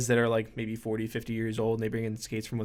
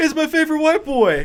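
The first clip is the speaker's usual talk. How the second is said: shrill, high-pitched, very loud shouting; 11 dB louder than usual. Retelling how a customer greets a coworker at the shop: imitating someone yelling. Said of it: "he yells at my coworker".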